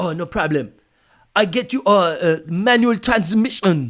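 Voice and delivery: loud, terrible, exaggerated put-on Japanese accent. Retelling Toyota's reply to the complaints, in a terrible Japanese accent. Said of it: "that was a terrible Japanese accent".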